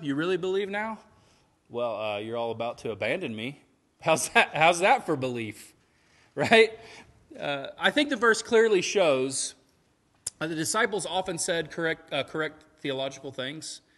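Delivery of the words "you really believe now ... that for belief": put-on sarcastic tone, higher and louder. Acting out Jesus answering the disciples, with put-on sarcasm. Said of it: "Can you pick up on the sarcasm?".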